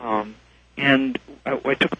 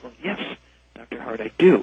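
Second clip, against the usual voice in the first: hushed, secretive, confiding, said under the breath; 3 semitones lower than usual. Retelling what a man said to you when alone in the room: hushed voice. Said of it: "in a hushed voice".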